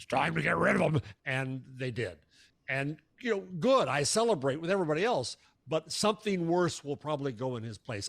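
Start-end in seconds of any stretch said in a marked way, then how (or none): 0.0-1.0 gruff, rough-edged voice. Retelling a call that ordered someone gotten rid of: Rupert's gruff voice. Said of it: "Rupert called with his gruff voice and said".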